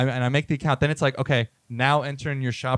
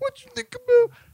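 very high-pitched, screeching, screamed put-on voice; 3 dB louder than usual. Retelling the wife's question to George, retelling a scream in a voice. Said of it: "I am screaming".

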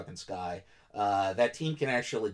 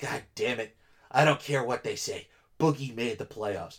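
put-on voice throbbing with feeling; 2 semitones higher, 4 dB louder than usual. Retelling a fan's emotional tweet about boogie making the playoffs: imitating a fan's throbbing emotional voice. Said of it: "you could almost feel the throb in his voice".

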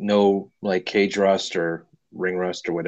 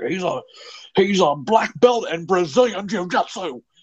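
very high-pitched, put-on voice; 13 semitones higher than usual. Retelling a fight broadcast line in a Mauro Ranallo impression. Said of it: "my Mauro Ranallo is pretty, pretty tight".

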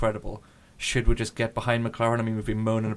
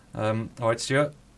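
ordinary talk, nothing marked

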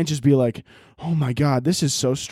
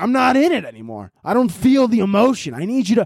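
ordinary talk

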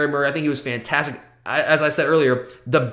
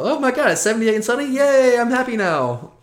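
high, laid-on, put-on excited gush; 8 semitones higher than usual. Teasing the other speaker about getting excited over weather: mock excitement. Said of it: "You get excited about".

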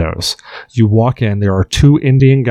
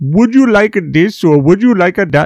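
put-on Indian accent; 8 semitones higher than usual. Describing a video game's store clerks, quoting their lines in an Indian accent. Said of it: "they even write it in the Indian accent".

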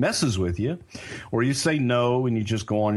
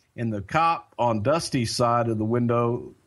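ordinary delivery

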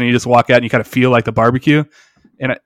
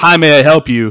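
loud, squawking voice; 3 semitones higher than usual. Describing ordering at a barbecue place, the speaker imitates employees squawking. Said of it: "just like squawking".

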